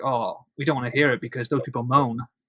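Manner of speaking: plain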